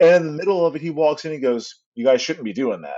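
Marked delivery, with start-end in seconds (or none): 1.9-3.0 put-on dead-serious voice. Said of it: "dead serious".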